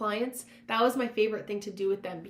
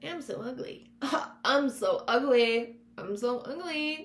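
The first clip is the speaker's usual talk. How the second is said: goofy, silly voice, very slow and drawn out; 3 semitones higher than usual. Demonstrating saying a negative thought out loud to defuse it, in a funny voice. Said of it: "saying it out loud in a funny voice".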